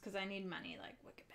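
soft, unvoiced whisper.

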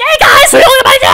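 very high, blaring, loud, shrill shouting streamer voice. Mocking how the YouTuber's audio sounds: imitating Ember's voice. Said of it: "that's what it sounds like".

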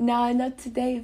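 put-on British accent. Asked to say something in a British accent, trying a put-on London accent. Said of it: "The British accent".

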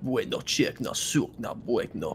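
slow, halting, put-on Russian accent. Describing how the russian dudes react in the game, mock russian accent. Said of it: "the Russian dudes are like".

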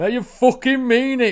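shrill, booming, very loud, high Yorkshire holler. Retelling what a man said at a gig, Yorkshire accent. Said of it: "it sounded like a Yorkshire accent".

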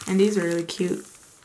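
ordinary talk, nothing marked

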